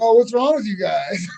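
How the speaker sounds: mock loud scolding voice. Retelling how comics yelled at a crowd when their material failed, imitating someone yelling. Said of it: "they start yelling at the crowd like".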